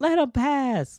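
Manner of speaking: put-on shrill, very high, loud screaming. Retelling a go-kart ride, imitating a passenger screaming: imitating wife screaming. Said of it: "She's screaming some more".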